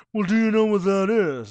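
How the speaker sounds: loud, high, haughty, snooty man's voice. Retelling a customer's call to the meat department, in a put-on snooty man voice. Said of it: "It's the Snooty Man voice".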